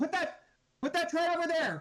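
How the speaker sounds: very high-pitched, slow, drawn-out shout. Voicing a character ordering others where to put a tread: shouting. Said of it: "She's probably just shouting like".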